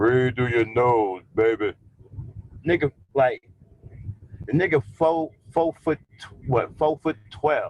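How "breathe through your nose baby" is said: put-on big, deep bass voice. Imitating a short, pudgy guy he's describing, in a put-on deep voice. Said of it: "with a big ass, deep voice".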